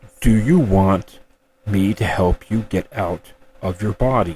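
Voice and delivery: deep, low baritone voice. Recounting what a floating presence said to them, in a deep baritone voice. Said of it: "it said in this deep baritone voice".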